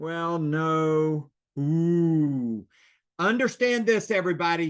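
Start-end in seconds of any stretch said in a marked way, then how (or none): 0.0-1.3 hesitant, unsure, drawn-out delivery. Showing how a prospect answers whether they'll list with you, hesitant. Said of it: "You hear a hesitation".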